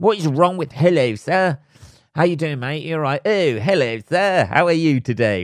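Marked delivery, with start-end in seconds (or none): 3.2-5.4 fussy, prissy, overly polite weird character voice. Complaining about people who call him sir, mocking politeness like a weird character. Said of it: "like they're some sort of fucking weird character".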